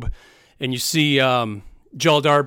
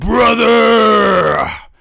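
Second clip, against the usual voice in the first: rough, very loud, drawn-out booming monster bellow; 3 dB louder than usual. Like a huge orc chieftain spotting an old ally across a crowd and roaring a greeting that rolls over everyone. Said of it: "a loud booming voice".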